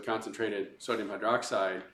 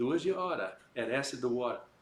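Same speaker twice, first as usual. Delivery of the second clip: put-on Boston accent; 3 semitones higher than usual. Teaching a memory phrase for mixing acid and water: Boston accent. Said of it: "just remember from Boston".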